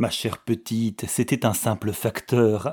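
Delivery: ordinary delivery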